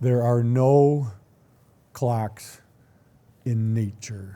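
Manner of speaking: slow, deliberate, halting, word-by-word delivery. A speaker making a key point in a talk, talking slow. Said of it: "I ever talk slow".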